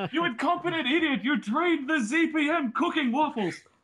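muffled, high-pitched, shrill yelling. Speaker imagines being the one Zelenka yells at: muffled Zelenka yelling. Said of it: "It sounded very muffled".

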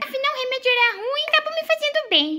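put-on high-pitched little boy voice.

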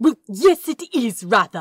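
very loud, exasperated, annoyed huffing retort. Narrator reads an angel answering an angry protest, with an annoyed huffing retort. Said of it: "retorted the angel, with a huff of annoyed breath".

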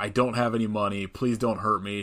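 normal talking voice

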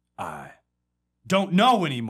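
slam poet delivery with slam poetry cadence. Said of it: "I don't know if I know how to talk like slam poet".

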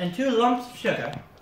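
put-on British accent. Eating a sticky toffee sweet, joking they can talk british now; fake british accent. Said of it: "I guess I can really talk like a British person now".

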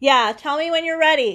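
shouting at full volume, very loud and high. Answering someone in another room who asks about saying ready: yelling. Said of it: "I didn't mean to yell".

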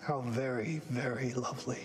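super creepy, eerie delivery. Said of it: "That's kind of like the way you said that".

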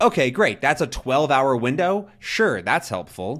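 dry, obviously sarcastic fake approval. Complaining about package delivery time windows: sarcastic. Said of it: "That was sarcasm, by the way".

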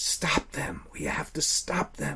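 urgent, pressing, breathy whisper, barely voiced. Seeing the blobs drain a victim, a companion speaks in an urgent whisper. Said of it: "Tima whispered urgently".

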